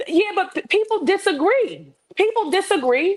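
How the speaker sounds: heated, emphatic, passionate voice. Disagreeing with another speaker in a heated exchange, raised passionate voice. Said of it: "I am raising my voice because I'm passionate".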